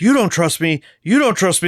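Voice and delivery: high, play-acted, repeated screaming outburst. Retelling a backstage moment after a match, imitating Seth Rollins screaming. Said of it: "just starts screaming".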